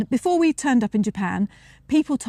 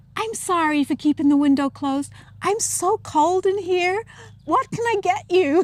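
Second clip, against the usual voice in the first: put-on American accent throughout, pitched up; 8 semitones higher than usual. Quoting what a woman said, in an American accent. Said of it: "excuse my American accent now".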